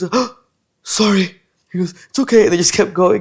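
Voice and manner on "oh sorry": play-acted nervous, spooked, frightened voice. Retelling a moment with a doctor during COVID; imitating someone scared. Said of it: "He gets all scared".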